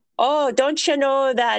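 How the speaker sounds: put-on Irish accent, pitched high. Retelling what she says when you go to check out, imitating Noreen in a put-on Irish accent. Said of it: "This is my Irish accent".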